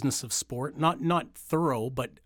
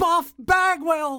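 very high, thrilled, excited ring-announcer-style call; 8 dB louder than usual. Retelling how Buff Bagwell introduced himself to Wayne, do an excited Buff Bagwell impression. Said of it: "And he's popping".

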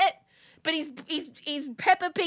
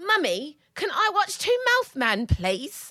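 put-on sweet British child accent; 2 semitones higher than usual. Retelling a little boy's morning request to his mummy, imitating a child's british accent. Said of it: "He's gone British".

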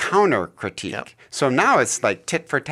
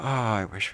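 put-on mutter under breath, quieter; 2 semitones lower, 8 dB quieter than usual. Showing what they start to say while waiting to leave: imitating muttering under breath. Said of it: "start to say something under my breath".

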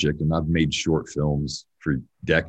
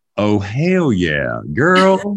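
loud, swooping, put-on Texas accent; 5 semitones higher, 7 dB louder than usual. Speaker trying to get their Texas accent: attempted Texas accent. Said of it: "I'm trying to get my Texas accent".

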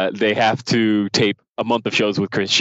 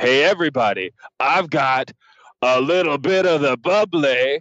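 slow, hammed-up, drawn-out showman-style delivery; 5 semitones higher than usual. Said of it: "he totally starts hamming it up".

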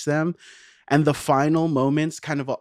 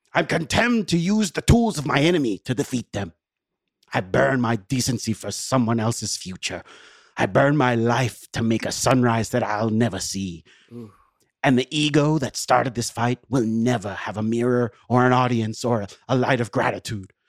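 put-on Swedish accent; 2 semitones lower than usual. Performing a quoted monologue as Stellan Skarsgård, in a Stellan Skarsgård accent. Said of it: "I'm going to try to perform it with my best Stellan accent".

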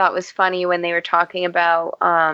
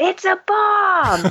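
sudden, very high put-on blurted, screamed-out yell; 13 semitones higher than usual. Retelling what a child screamed out during the movie, acting out the scream. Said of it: "he screamed out".

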